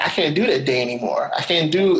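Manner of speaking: ordinary delivery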